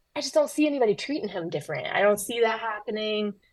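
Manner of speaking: ordinary talk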